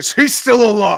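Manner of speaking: deep put-on American voice. Doing a monologue to summon a Jensen Ackles voice. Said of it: "summon my Jensen Ackles".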